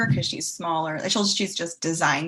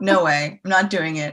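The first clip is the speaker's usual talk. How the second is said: put-on deadpan voice, louder; 5 dB louder than usual. Imitating Fiona refusing something as a joke: imitating Fiona's deadpan delivery. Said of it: "It's a deadpan joke she delivers".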